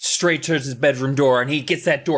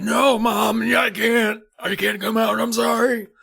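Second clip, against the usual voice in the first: put-on very old, ancient-sounding voice, higher; 8 semitones higher than usual. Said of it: "You sound like you're a hundred thousand years old".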